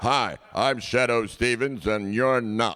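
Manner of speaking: classic signature commercial announcer voice-over delivery. Asked to say a few words, the voice of many commercials does his signature commercial voice. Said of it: "like in the Shadow Stevens voice".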